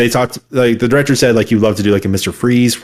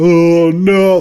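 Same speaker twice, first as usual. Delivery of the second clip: mock weepy, sobbing delivery, high crying voice; 7 semitones higher, 3 dB louder than usual. Retelling a movie ending where a character cries in his cell: imitating Riddler crying. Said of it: "He starts crying in his cell".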